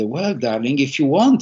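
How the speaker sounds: put-on very proper, prim, correct British accent. Speaker quoting their grandma's offer to help at seventeen, imitating grandma's proper british accent. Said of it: "very British accent, my grandma, very proper".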